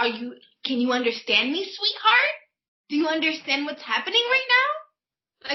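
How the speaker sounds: put-on high, patronising voice, talking down as to a child. Imitating clients who talk down to her: imitating condescending clients. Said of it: "their voice is like that inflection, like, I'm five".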